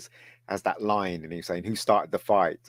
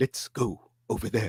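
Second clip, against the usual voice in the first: put-on old sea captain delivery; 3 semitones higher, 6 dB quieter than usual. Imitating the actor who played Sisko, who talks like William Shatner. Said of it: "it's just like William Shatner".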